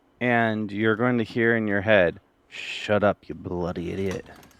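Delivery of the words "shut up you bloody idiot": hushed whisper, slower. Speaker says he'll whisper a line listeners hear in their heads, whispering. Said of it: "I'm gonna whisper".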